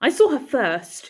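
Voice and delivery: snarling, high voice. Reading a brother's rival claim aloud: snarling. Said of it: "Feely snarled".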